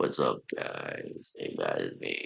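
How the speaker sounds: hushed, breathy, very deep raspy whisper. Showing the voice he tried for his channel outro: deep raspy voice. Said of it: "I was making a raspy, like".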